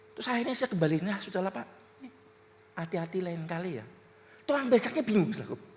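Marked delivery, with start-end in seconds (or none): 1.0-3.9 soft, calm, gentle, reassuring tone. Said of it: "Kalem, ngomongnya lembut".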